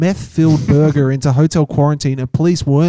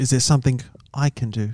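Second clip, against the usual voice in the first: charming put-on voice, quieter; 2 semitones lower, 6 dB quieter than usual. In a comedy bit, someone threatens to write them up; sexy Hugh Grant voice. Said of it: "could get out of anything with that sexy voice".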